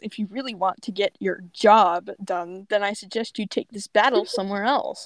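normal talking voice

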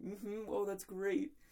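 mock, high-pitched, barely holding in a laugh. Retelling a reply to a teacher's odd answer: imitating stifled laughter. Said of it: "trying not to laugh at her".

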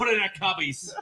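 horrible, bad New Hampshire accent. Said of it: "my horrible New Hampshire accent".

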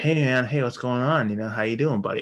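casual, relaxed, friendly buddy voice. Retelling a man greeting someone on the phone, The Dude impression. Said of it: "he sounds kind of like the dude from The Big Lebowski".

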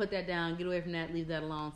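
ordinary talk, nothing marked

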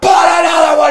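acted very high, unhinged, wild voice. Retelling how Tony Robbins pushed a crying man with cigarettes, acting out someone going crazy. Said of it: "He's going crazy on this guy".

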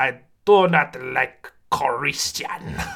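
put-on venomous, seething, evil old man villain voice. Imitating a cynical old japanese man's usual line, in an evil, seething voice. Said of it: "That's his actual voice. ... evil, like, seething".

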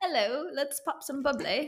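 put-on English accent. Redoing the accent another speaker said they did; british accent. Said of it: "I did like a British or an English accent".

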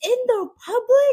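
high, loud freaked-out yelp. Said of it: "Like, he's freaking out".

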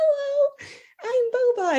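tiny, squeaky cat voice, very high pitched. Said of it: "he's just like really high up there".

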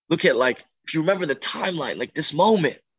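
yelled high and loud. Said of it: "just yell at this kid".

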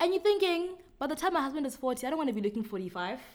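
put-on high, fast girlish voice.

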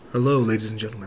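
seductive, sensual, sultry voice. Speaker greeting the ladies and gentlemen, trying a sensual voice. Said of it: "I'll make it sensual".

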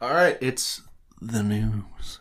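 very slow, soft, hushed ASMR murmur. Moving from an ad read into the news segment, ASMR-style delivery. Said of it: "that was way more ASMR".

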